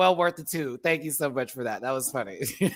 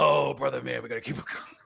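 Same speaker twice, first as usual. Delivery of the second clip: put-on demon character voice; 6 semitones lower than usual. Speaker shows how the other demon talks, imitating the other demon. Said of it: "You know how he talks like this".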